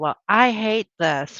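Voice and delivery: ordinary talk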